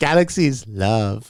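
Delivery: put-on Salvadoran Spanish accent. Retelling a text a friend sent from the beach: imitating Jose's Salvadoran accent. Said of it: "Okay, I'm gonna do the accent".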